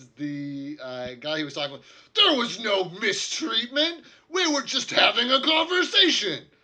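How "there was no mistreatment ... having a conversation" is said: shrill, very loud, very high, offended and indignant. Voicing a man denying he mistreated the waitress: indignant.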